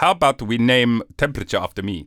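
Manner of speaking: terrible, clumsy, put-on German accent. Imitating a German physicist proposing a temperature scale: terrible German accent as Fahrenheit. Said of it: "Terrible accent".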